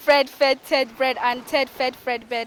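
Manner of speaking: very loud, fast rattled-off run. Repeating a tongue twister after being told to say it faster.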